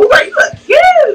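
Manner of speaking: very high, sweet, friendly voice. Showing how women greet a friend with a compliment, acting out that tone. Imitating a high-pitched friendly tone. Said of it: "don't use that high pitched like tone".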